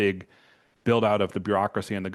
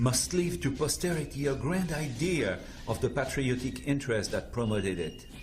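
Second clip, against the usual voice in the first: fake French accent throughout; 4 semitones higher, 6 dB quieter than usual. Narrating a documentary clip, quoting the planner in a French accent. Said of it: "this guy with his voice do his French accent".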